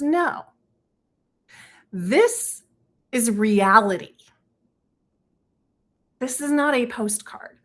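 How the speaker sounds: slow, serious but not stern delivery. Retelling what a farmer told an influencer: imitating a serious farmer. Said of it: "he gets serious, not, not stern, just serious".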